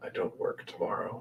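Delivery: close, hushed, barely voiced whisper. A game master voices a man leaning over the desk, whispering in the player's ear. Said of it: "he whispers in your ear".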